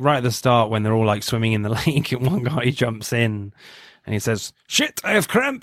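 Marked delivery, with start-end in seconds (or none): 4.7-5.6 put-on Danish accent, very high pitch. Retelling a guy's line as he jumps into the lake: Danish accent. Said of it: "That was quite a good Danish accent".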